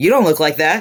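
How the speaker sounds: put-on, half-hearted, mock yelling. Retelling a reaction to the real people behind film roles: imitating yelling. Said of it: "yelling at the real Ed".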